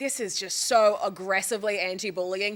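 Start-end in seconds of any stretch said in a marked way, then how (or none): none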